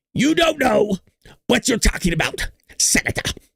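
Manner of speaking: raspy, high, creaky voice. Retelling a hearing exchange with a senator, doing a Fauci impression. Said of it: "that was a good Fauci impression".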